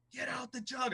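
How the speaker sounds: mock, high-pitched screaming. Retelling taunting the opposing players from the stands: imitating someone screaming. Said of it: "I'm screaming at these Michigan players".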